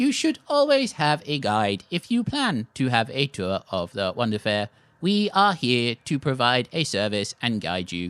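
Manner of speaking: mechanical brass automaton voice with swooping pitch. Voicing a metal automaton explaining fair tours: brass automaton voice. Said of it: "One of them looks at you".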